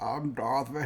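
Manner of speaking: put-on very old man's voice, sounding about eighty. Mocking a recast veteran actor voicing Darth Vader, do an old James Earl Jones impression. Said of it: "he sounds like an eighty year old man".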